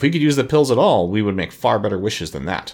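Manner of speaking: ordinary delivery, nothing marked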